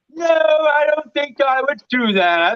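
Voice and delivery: put-on very slow, very high, drawling British accent. Retelling a friend's reply about a link: imitating a friend's british accent. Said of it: "That was an uncanny accent".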